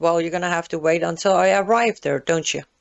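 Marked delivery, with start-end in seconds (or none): none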